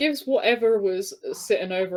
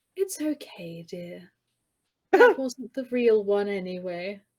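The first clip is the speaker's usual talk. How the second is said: gentle, sighing voice. Game master voicing Lady Dubois to a player character, sighing gently. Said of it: "she gives a little sigh and she pats you".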